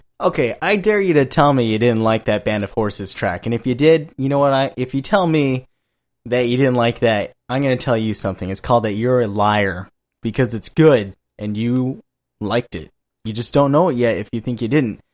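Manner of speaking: ordinary talk, nothing marked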